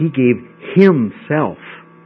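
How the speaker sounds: slow, emphatic delivery with weight on "himself". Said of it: "the Greek puts the emphasis on himself".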